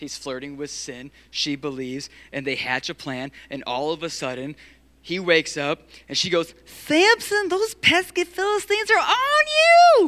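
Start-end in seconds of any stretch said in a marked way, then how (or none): 6.9-10.1 put-on high, loud, old-fashioned Southern grandma voice. Acting out Delilah waking Samson: 1940s Southern grandma voice. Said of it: "a nineteen forties Southern grandma".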